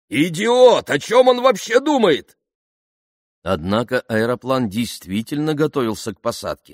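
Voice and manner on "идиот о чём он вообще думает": very high, loud, outraged cry. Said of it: "воскликнул полковник".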